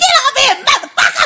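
acted-out shouting. Recounting reacting to an intense scene on tv: retelling a yell at the tv. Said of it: "I was yelling, too".

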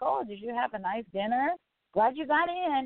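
mimicked sarcastic voice. Retelling what a cameraman said to a pair leaving a restaurant, mimicking his sarcasm. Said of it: "the cameraman trying to be sarcastic".

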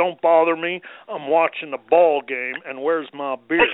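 dismissive, brushing-off man's voice. Describing a couple's routine, acting out the husband's reply to his wife, impersonating him. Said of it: "That was a great impersonation".

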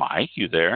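ordinary talk, nothing marked

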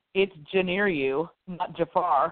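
ordinary delivery

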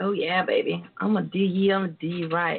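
low, smooth, big-talking flirtatious sweet talk

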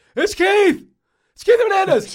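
put-on drunk shouting voice. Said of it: "Keith Hernandez drunk calling you".

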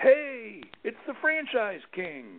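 put-on, very high-pitched, full-volume yell. Retelling how a chamber director called out across the room: imitating someone yelling at full volume. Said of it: "yells out at full volume".

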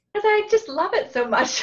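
giggling through the words, very high and loud. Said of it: "why are you giggling".

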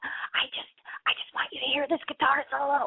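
high-pitched, hushed whisper. Guest acts out her mom calling from a loud show, imitating mom whispering into phone. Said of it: "she's whispering in the phone".

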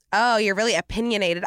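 plain

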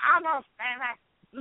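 high, loud yell, shouted to carry far. Retelling being announced while Charlotte produced the show; retelling a yell. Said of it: "I'm like yelling from the back of the room".

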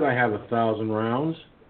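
ordinary talk

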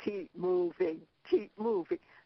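ominous, sinister, menacing sci-fi agent tone. Retelling a man who took the speaker by the arms: retelling a sinister voice. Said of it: "said in a sinister voice".

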